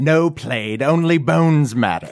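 scornful, taunting, high-pitched mocking sneer. As the bone collector, answering Plaid, mocking. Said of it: "The bone collector says mockingly".

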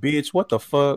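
put-on disgusted voice. Retelling a son's reaction to his mother: imitating a disgusted son. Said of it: "Her son was so disgusted".

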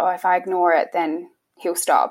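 normal talking voice

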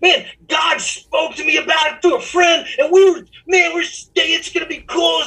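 put-on excited screaming. Retelling a phone call offering a job: imitating own excited screaming. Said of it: "I was literally screaming in the living room".

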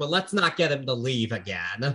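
ordinary talk, nothing marked

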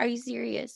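high, put-on panicky, freaked-out disbelief. Retelling watching the ticket queue, imitating own past freaking out. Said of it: "freaking out".

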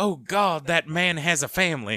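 put-on very thick Southern announcer accent. Retelling a wrestling commentator's line: imitating Jerry Lawler, thick Southern accent. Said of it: "in a very thick Southern accent".

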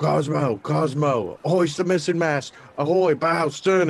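violent shouting, high and loud. Describing how they'd revive someone with a rope, the speaker demonstrates shouting violently. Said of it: "I would just start shouting".

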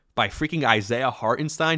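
ordinary talk, nothing marked

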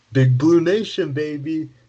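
put-on hype announcer voice, high and loud. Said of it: "I'll do my Dick Vitale voice here".

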